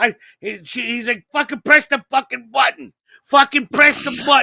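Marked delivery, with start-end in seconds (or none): 1.3-4.4 put-on gruff berating tough-guy voice, higher, louder. Retelling a tough actor berating a fumbling photographer: imitating Frank Vincent pouring it on. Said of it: "He's pouring it on".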